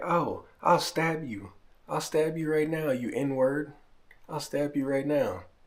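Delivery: high, furious mock rant in a madwoman voice. Retelling a woman in an alleyway going off at them, imitating her angry threats. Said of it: "She's all mad and friggin' making threats".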